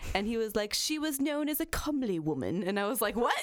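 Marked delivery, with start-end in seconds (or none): 0.7-2.6 high, terrible put-on British accent. Quoting a British audiobook narrator, the speaker does a bad British accent. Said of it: "that was a terrible accent".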